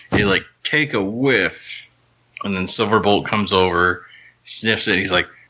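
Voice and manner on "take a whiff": put-on speaking with a New York accent. Retelling a cartoon scene, quoting the character Rat Trap: New Yorker accent. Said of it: "it sounds so New Yorkerish".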